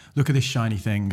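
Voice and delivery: ordinary talk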